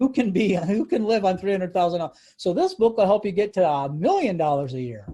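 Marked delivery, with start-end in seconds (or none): 0.0-2.2 dry, ironic, sarcastic disbelief. Talking about a book on consulting fees, sarcastic tone. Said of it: "I'm being sarcastic".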